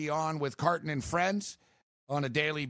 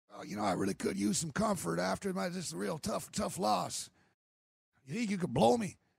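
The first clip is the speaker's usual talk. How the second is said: put-on gravelly, creaky voice; 3 semitones higher, 3 dB quieter than usual. Joking about a funeral, doing a Bill Clinton impression. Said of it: "I do a good Bill Clinton impre-, impression".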